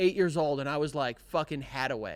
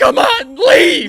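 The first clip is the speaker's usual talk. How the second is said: mock freak-out, much higher and louder; 13 semitones higher, 15 dB louder than usual. Imagining holding a gun on an intruder, like in the movies: mock freaking out. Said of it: "if he's freaking out like that".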